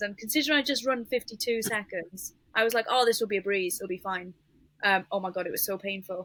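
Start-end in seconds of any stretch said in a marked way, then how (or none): none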